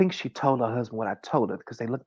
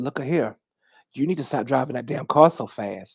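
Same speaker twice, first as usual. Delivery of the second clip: put-on stern scolding elder voice, louder; 5 dB louder than usual. Retelling a warning given to a young woman in a store: imitating a scolding elder. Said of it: "just like that, like an elder".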